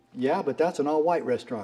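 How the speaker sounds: ordinary talk, nothing marked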